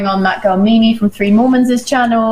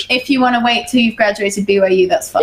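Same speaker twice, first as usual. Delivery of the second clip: ordinary talk, nothing marked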